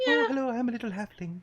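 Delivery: light, lilting, very high voice. Suggesting a voice for a halfling character: light lilting voice. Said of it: "go kind of light and lilting".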